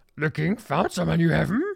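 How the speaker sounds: cheerful, high-pitched, creaky voice. Showing another degree of the Yoda voice: happy Yoda voice. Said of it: "more like happy Yoda".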